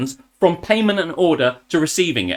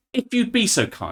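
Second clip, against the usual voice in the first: sarcastically overpolite, pitched up; 5 semitones higher, 4 dB quieter than usual. Retelling asking staff for a long-delayed latte: retelling own sarcastic reply. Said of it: "with a measure of sarcasm".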